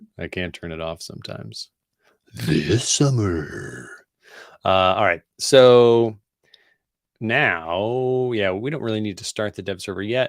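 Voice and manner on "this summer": epic movie trailer announcer narration voice. While building code, the speaker slips into a movie trailer voice. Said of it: "I love talking in the movie trailer voice".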